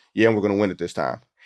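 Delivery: play-acted deadpan, fast, flat, matter-of-fact. Retelling Tim Duncan's answer to a reporter after a game, deadpan. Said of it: "Tim Duncan very deadpan said".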